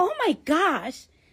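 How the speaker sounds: put-on Staten Island accent speech. Retelling her OBGYN's reaction during a sonogram, imitating Staten Island accent.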